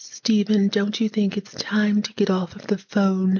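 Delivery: put-on voice, near whisper. Voicing Claudia asking Stephen to get off the phone: almost whispered Claudia voice. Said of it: "You gotta whisper it almost".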